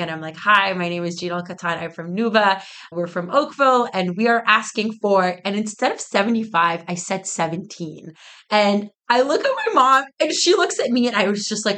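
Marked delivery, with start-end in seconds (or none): none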